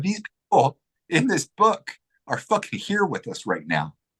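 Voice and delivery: emotional voice, high and swooping. Recounting what he told her, getting emotional. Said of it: "I can't help but get emotional".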